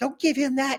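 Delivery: put-on, very high-pitched screaming yell. Retelling mom objecting when handed a joint: imitating mom yelling. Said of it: "I remember my mom yelling".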